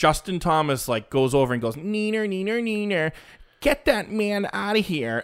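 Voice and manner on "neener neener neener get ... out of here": put-on whiny crybaby voice, higher and quieter. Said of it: "such a whiny little baby".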